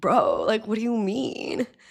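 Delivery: put-on soft, laid-back dude bro voice, Florida accent. Mimicking how all the guys in Florida talk, bro voice. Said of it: "That's exactly how they sound".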